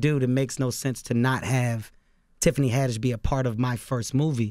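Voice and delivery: ordinary talk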